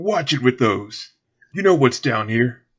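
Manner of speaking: booming, very loud, rough, gruff character voice. In a tabletop game scene, voicing the same unheard speaker again, gruff voice. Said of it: "the same gruff voice say".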